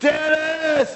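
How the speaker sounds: shouting loudly. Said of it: "and she's yelling".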